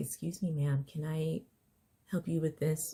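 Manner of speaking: sweet, ever-so-gentle, soft put-on voice. Acting out a biker-looking stranger offering help: imitating the gentlest voice. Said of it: "the gentlest of voice".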